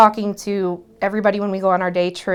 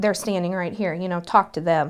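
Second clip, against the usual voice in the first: ordinary talk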